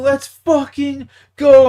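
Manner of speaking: freaked-out, panicky delivery. Retelling a home run while watching the game: reenacting freaking out. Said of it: "I'm like freaking out".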